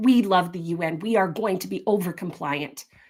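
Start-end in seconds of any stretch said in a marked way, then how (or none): none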